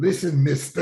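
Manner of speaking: loud, intimidating tone. The speaker recalls a man with a broken pointing finger, imitating how he talked. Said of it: "And he would talk like".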